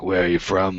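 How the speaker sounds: put-on drunk, smoky woman voice. Retelling a woman's question to him, imitating a drunk, tired woman. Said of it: "if Emma Stone was drunk and tired and Japanese".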